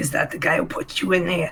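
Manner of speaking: quiet, hushed whisper. Speaking in character while hiding in the shadows: whispering. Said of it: "I'm kind of, like, whispering".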